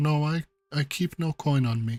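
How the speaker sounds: mild, gentle-mannered, soft-spoken voice. Voicing a woman the players ask for money, in Valus's soft quiet voice. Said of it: "she speaks to you in a very like soft, kind of quiet voice".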